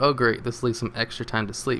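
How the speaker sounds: ordinary talk, nothing marked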